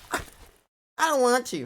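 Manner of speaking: put-on very high voice like a small child. Mocking how Shadwell answers when asked to show his face, childlike Shadwell imitation. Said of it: "Like a child".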